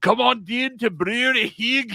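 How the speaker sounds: awful put-on Scottish accent, very high pitched. Joking about a brewery name in a terrible scottish accent. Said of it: "a fucking terrible Scottish accent".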